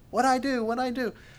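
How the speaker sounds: high, mock whining whimper.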